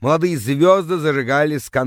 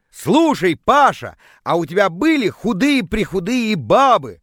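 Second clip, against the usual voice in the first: deliberate, slow, drawn-out, pitched-up pointed tone; 6 semitones higher than usual. A man starts an intimate question to another man, deliberately very loud. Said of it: "специально начал очень громко".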